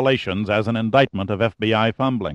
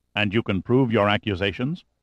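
ordinary delivery

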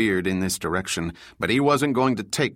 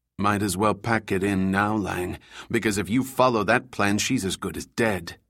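ordinary delivery

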